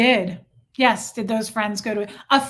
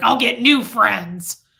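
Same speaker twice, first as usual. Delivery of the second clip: put-on growly, furious voice. Retelling what a man said back then: imitating a growly, furious voice. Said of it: "I'll never forget his growly voice".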